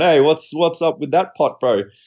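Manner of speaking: cocky, swaggering tone. Retelling going over to ask about a separate pot: imitating own cocky tone. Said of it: "all cocky going".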